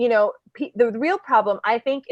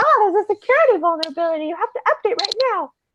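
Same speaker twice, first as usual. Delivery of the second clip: very high, clever cartoon bear voice; 10 semitones higher than usual. Speaker mimics a wp engine security email, in a smart bear voice. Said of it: "That's my smart bear voice".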